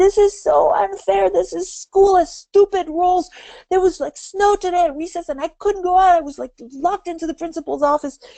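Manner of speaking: put-on very high shrieking young child voice. Acting out a six-year-old home from school: imitating a screaming six-year-old. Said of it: "walking in and screaming".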